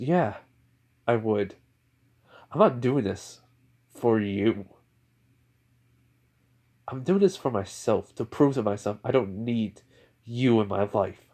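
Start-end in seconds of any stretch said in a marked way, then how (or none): none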